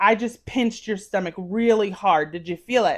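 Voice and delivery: normal talking voice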